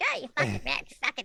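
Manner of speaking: tiny little elf voice gone creaky and zombie-like. Imitating the potty-mouthed zombie elves: tiny little zombie elf voice. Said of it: "these tiny little voices".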